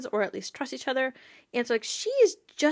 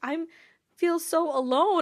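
put-on high voice on the verge of crying; 5 semitones higher than usual. Describing a show scene, the speaker acts out Percy with his eyes about to cry. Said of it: "with his eyes about to cry".

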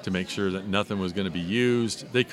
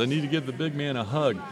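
put-on English accent, pitched up a touch; 10 semitones higher than usual. Retelling what a friend said while coming over to greet him, in an imitation of his British accent. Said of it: "in his British accent".

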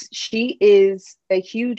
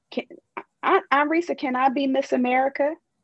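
put-on high, small, tiny young child's voice; 6 semitones higher than usual. Recalling asking an aunt as a young child: imitating own little child voice. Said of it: "I can hear my little voice saying".

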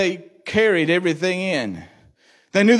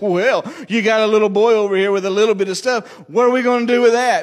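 cheeky, know-it-all smart-aleck tone; 3 semitones higher than usual. Retelling the Bible story, the speaker quotes a disciple answering Jesus, mimicking a smart-aleck tone. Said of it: "in a kind of a smart aleck tone".

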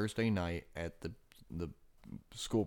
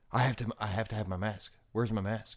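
put-on voice of a child breaking down. Speaker retells a kid's breakdown at school drop-off, acting out a kid's breakdown. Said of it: "poor kid has like an almost instant breakdown".

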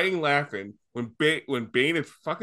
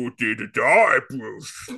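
put-on cartoon villain voice, much lower pitch; 4 semitones lower, 3 dB louder than usual. Chatting with a friend about Bane, quoting him in a Bane voice. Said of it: "now you sound like a Teen Titans".

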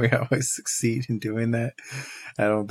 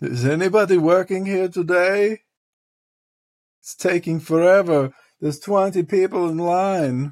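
weak, loud, high-pitched put-on German accent; 8 semitones higher, 6 dB louder than usual. Retelling a man behind them waiting at a restaurant; German accent. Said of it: "I hear in this German accent".

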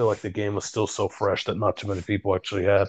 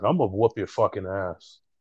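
mock cocky, taunting tone. Retelling what a cocky game opponent said: imitating a cocky opponent. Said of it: "he was cocky as shit".

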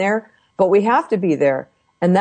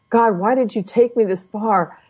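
tearful crying voice full of despair; 3 semitones higher than usual. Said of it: "I was just crying, going".

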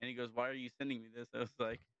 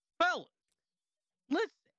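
piercing, shrill, very high and very loud yell; 11 dB louder than usual. Imitating a guy whose speech progressively gets louder, imitating a loud shout. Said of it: "And it progressively gets louder".

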